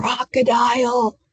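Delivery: soft whisper. Showing a class a hearing test, whispering words to guess: whispering. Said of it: "I'm gonna whisper some words".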